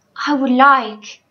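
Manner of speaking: timid, shy, hesitant little voice. Reading a story, Mig answers Uncle, shy. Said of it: "said Mig shyly".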